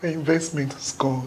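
in tears. Answering the other's question about what happened, crying. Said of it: "Why are you crying?".

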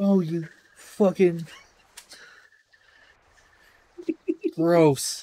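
tearful speech, crying through the words. Reacting to a nasty smell, crying while talking. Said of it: "Dude, you're actually crying".

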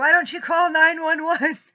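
very high shrieking scream at full volume. Retelling a dream where a husband screams from outside: imitating a husband screaming. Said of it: "my husband's screaming from the outside".

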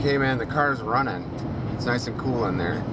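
ordinary talk

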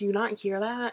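ordinary talk, nothing marked

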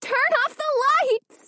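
very high, shrill, frightened cry. A woman repeats her order to the others, in a high, shrill, frightened voice. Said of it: "She repeated in a high, shrill, frightened voice".

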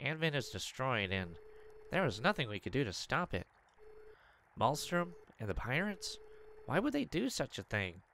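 nasally character voice. Voicing story dialogue aloud, in a nasal voice. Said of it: "I sounded really nasally there".

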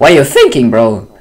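loud voice, cracking and breaking mid-line. Insisting to someone that he is not rich, voice cracking. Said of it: "that was a voice crack".

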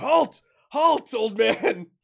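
very slow, drawn-out, commanding shout. Voicing a lead warden with his sword drawn, ordering a fleeing old man to stop: shouting lead warden. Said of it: "He's shouting".

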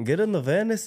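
high-pitched, put-on Colombian accent. Recalling how they used to talk while playing a game, Colombian accent. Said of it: "he used to talk like a Colombian bloke".

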